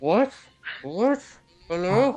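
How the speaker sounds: high, muffled, distant voice as through cloth. Showing how someone sounds from far away through a bandana, muffled distant voice. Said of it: "It sounds like you're speaking from five meters away, holding a bandana over your mouth".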